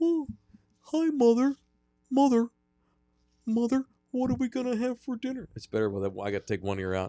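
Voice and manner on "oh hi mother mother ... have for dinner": Wisconsin accent with much higher pitch. Showing a voice he has been working on: Ed Gein voice, high Wisconsin accent. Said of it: "I've been working on my Ed Gein voice. It's a Wisconsin hockey accent, but with a real high pitch".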